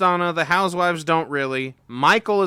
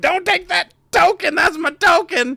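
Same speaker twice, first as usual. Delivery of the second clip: very high-pitched, pleading voice; 13 semitones higher, 3 dB louder than usual. Recapping the game, voicing Rappaport trying to stop it; Rappaport begging. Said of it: "up begging like a dude".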